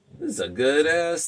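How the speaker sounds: thrilled whooping.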